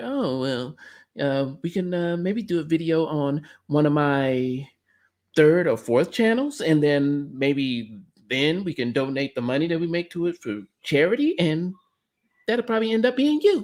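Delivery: put-on smug, snide, condescending talking-down voice. Mocking a man's condescending remarks in his video, snide condescending tone. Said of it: "sounded like a contradicting ass snide ass bitch".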